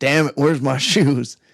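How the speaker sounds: put-on grumbling. Retelling a story, imitating someone grumbling as he gets up: imitating a grumble. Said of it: "Ron just grumbles to his feet".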